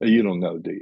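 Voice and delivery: ordinary talk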